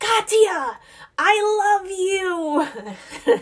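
long, very high, drawn-out shouted yell. Retelling yelling out to her daughter to calm herself: imitating her own yell. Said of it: "And I yelled it just like that".

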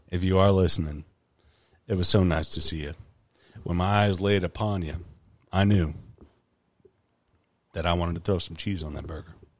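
low, sultry, seductive voice. Asked to say one thing to the asker's mom: sultry voice. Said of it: "say one thing to my mom in your sultry voice".

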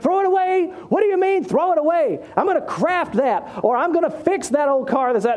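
horrified, incredulous tone.

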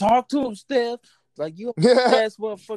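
high-pitched acted yelling. Retelling watching a game on TV: retelling yelling at the TV. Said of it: "I was yelling at the TV".

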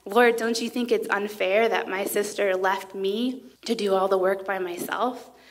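ordinary talk

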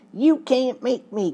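soft, high whining voice. Narrator reads a man objecting when ordered to go up and look, whining tone. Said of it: "Clean objected in a whining tone".

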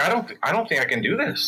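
ordinary talk, nothing marked

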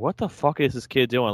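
put-on terrified voice. Retelling Kyle Shanahan's reaction to a kid on the field: imitating terrified Kyle Shanahan. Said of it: "Kyle Shanahan was, like, terrified".

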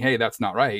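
usual speaking voice

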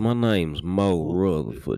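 put-on Florida panhandle Southern accent. Imitating a movie character's fake accent: Mo Rutherford Southern accent. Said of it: "Kinda like a Florida panhandle".

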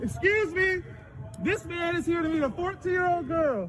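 high, loud, yelled calling out. Calling out to everyone nearby after warning the man: yelling to a crowd. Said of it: "I'll start yelling".

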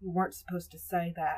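plain reading voice

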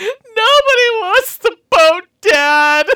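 mock, shrill, very high, loud, weepy, tearful wail. Recapping a scene, acting out what Sora said to her dad, imitating Sora crying. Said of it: "Tears streaming down her face goes".

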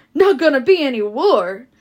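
loud, offended, indignant outcry. Narrator reads twins reacting to a dismissive remark, crying out indignantly. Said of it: "cried the twins indignantly".

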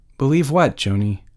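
ordinary delivery

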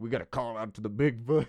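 put-on Southern accent. Imitating people on a Bigfoot show: imitating a Southern accent. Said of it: "I don't know why I'm doing so many Southern accents".

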